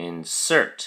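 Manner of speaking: "insert" stressed on second syllable -sert, inSERT. Teaching the verb form: stress on second syllable of insert. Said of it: "the emphasis or stress is on the second syllable".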